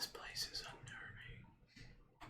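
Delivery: hushed, slow, breathy, drawn-out whisper. Voicing a creature behind the party that mimics a companion: whisper. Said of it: "you hear a whisper".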